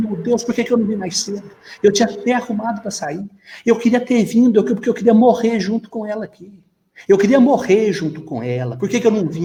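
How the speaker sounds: desperate, sobbing cry of despair. Speaker retells a young woman's tv interview after a nun's murder: imitating desperate crying. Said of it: "Ela falava isso e chorava".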